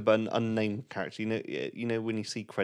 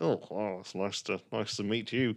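slow, sleazy flirting voice. Retelling a film scene of flirting with a delivery driver: imitating a sleazy flirt.

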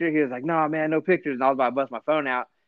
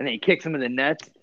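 ordinary delivery

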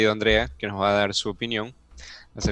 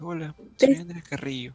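put-on sweet little voice, higher pitched; 7 semitones higher than usual. Teasing someone by repeating their introduction: imitating Andrea's sweet little voice. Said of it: "pones una vocecita así como que muy dulce".

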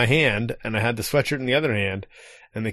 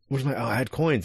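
put-on panicked male voice; 3 dB quieter than usual. Retelling how a man reacted after his coins were taken, imitating a panicked man. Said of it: "panicked a little bit".

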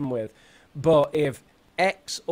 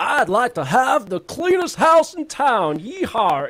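put-on very high, loud, hooting old gold prospector voice; 10 semitones higher, 6 dB louder than usual. Showing a silly way to speak a practice sentence, old gold prospector voice. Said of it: "couldn't you speak like an old gold prospector?".

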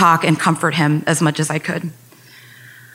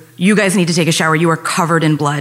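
normal talking voice

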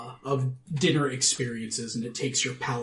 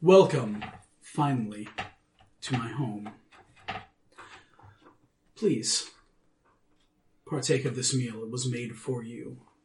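put-on rich, deep, resonant, sonorous vampire voice, no accent. A game narrator voices a vampire host who turns to the players; deep sonorous vampire voice. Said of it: "in a deep and sonorous voice".

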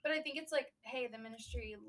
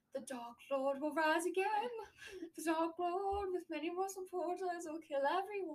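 high, slow, trance-like prophetic voice. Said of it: "talking really loudly and distinctly".

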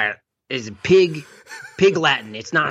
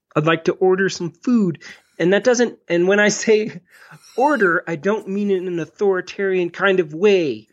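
a touch higher, over-explaining, pedantic voice; 5 semitones higher than usual. Acting out a comedy bit of ordering a pizza: Jordan Peterson impression. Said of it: "Your impression of him is the best".

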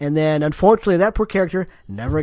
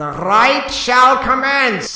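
put-on voice with rolled R's, higher, louder, slower; 8 semitones higher, 4 dB louder than usual. Imitating the voice that speaks to you in a game, with rolled r's. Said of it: "sounds kind of like Vincent Price but more anal, and he rolls all his R's".

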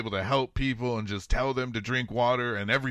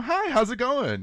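very high, drawn-out, way too cheerful voice, acted out; 12 semitones higher, 3 dB louder than usual. Retelling how the hospital staff greeted him: imitating an overly chipper greeting. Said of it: "You're way too fucking chipper".

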